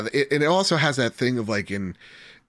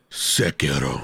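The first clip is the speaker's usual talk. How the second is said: very deep, forceful voice pushed from the chest; 9 semitones lower than usual. Imitating how the Owl Father says Sekiro: Owl Father chest voice. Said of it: "they say it with their fucking chest".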